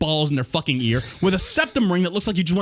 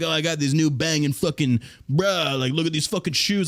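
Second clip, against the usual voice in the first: mocking bragging guy voice; 3 semitones lower than usual. Mocking men who care more about sneakers: mocking a sneaker-bragging guy. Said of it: "Men that go out there and they put more attention on the type of fucking sneakers".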